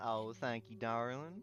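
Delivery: put-on cool, loud Southern American accent. In character, answering a compliment from arriving travelers: Southern accent. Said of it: "We're doing Southern".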